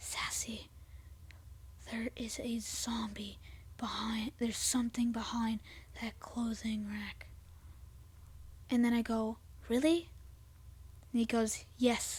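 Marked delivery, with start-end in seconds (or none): 0.0-7.3 very quiet, hushed, scared whisper. Retelling how he whispered a warning to them, a quiet whisper. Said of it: "he goes in a quiet voice".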